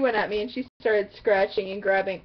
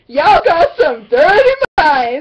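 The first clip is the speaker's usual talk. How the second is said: put-on Jamaican accent, very loud, swooping; 8 semitones higher, 13 dB louder than usual. Retelling what a teacher said in class, imitating a Jamaican accent. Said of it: "So it was like a Jamaican accent".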